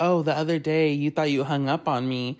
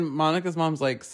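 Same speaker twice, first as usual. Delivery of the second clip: usual speaking voice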